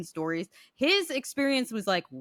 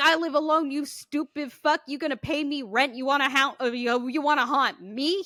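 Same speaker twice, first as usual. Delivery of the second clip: put-on angry cussing, higher pitch; 7 semitones higher, 3 dB louder than usual. Retelling how a man reacted to a ghost copying his voice: imitating a man cussing out a ghost. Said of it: "He is cussing the ghost out".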